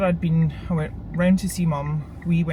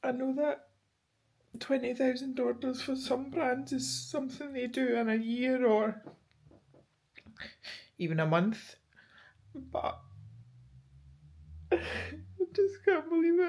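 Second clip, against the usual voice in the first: tearful, pitched-up crying voice; 8 semitones higher, 8 dB quieter than usual. Talking about twenty thousand orders for a brand just made over, speaking while crying. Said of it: "I'm crying again".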